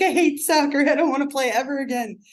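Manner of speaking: put-on full-blown tearful sobbing crying child voice. Retelling a seven-year-old in tears at soccer practice, imitating a crying child. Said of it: "Tears, just like full-blown tears".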